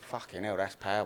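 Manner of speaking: tough-guy gangster character voice. Improvising a drug deal as gangsters for a mock audition: playing a gangster. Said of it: "we're two gangsters".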